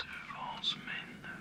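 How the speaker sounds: speaking in a whisper. Talking to a loved one over the phone, whispering. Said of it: "Why is he whispering like that?".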